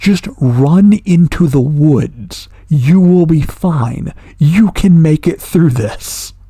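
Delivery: acted urgent yelling. Describing screaming at a fleeing man while watching, retelling screaming out loud. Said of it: "I am like screaming out loud".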